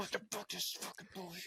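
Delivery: whispered yell, strained, forceful and breathy. Speaker acts out their own reaction while listening to a story, whisper yelling. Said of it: "I just started the whisper yelling".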